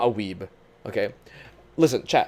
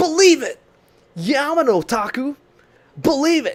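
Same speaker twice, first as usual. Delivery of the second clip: exaggerated, over-the-top bad anime dub voice, very high; 13 semitones higher, 6 dB louder than usual. Joking with someone about a name, mimicking old badly dubbed cartoons, in an over-the-top old dub voice. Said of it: "It's like the old Naruto dubs".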